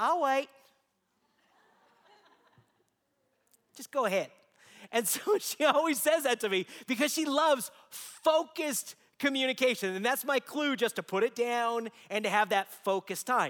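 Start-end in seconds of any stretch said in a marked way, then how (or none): 0.0-4.3 put-on, cute, little Southern belle accent. Quoting what your wife always says while you text, imitating her cute little Southern Belle voice. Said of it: "in her cute little Southern Belle voice".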